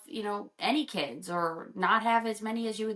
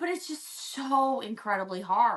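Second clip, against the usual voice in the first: very slow, on the verge of tears, choking up. Sharing something painful with another speaker, on the verge of tears. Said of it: "and now I am gonna cry".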